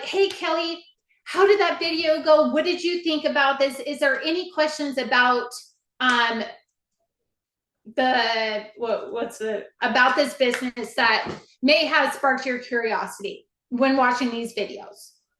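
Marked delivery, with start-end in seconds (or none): 0.0-2.5 cheerful, upbeat, friendly tone, pitched up. Showing how to follow up with someone about a business video, upbeat and friendly. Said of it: "she's like so upbeat".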